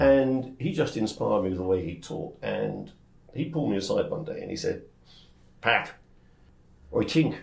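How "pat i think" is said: put-on speaking with Cornish accent. Telling how an inspirational teacher pulled you aside, quote him in a put-on accent that sounds Cornish. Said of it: "Also from Cornwall, I see".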